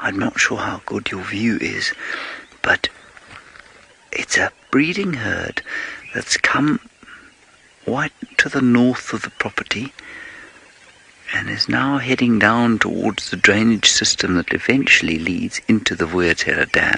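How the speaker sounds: discreet, low-key running field-guide commentary. Speaker pointing out a nearby herd to a listener, speaking quietly. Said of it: "the reason I'm speaking so quietly".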